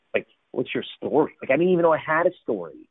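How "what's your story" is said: rude, challenging tone. Retelling how being asked for their story felt: imitating an offensive-sounding question. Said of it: "it sounded offensive".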